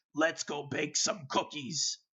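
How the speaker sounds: rough, gravelly voice. Recalling a game character speaking up out of nowhere, in a gravelly voice. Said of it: "I hear one of them in a gravelly voice".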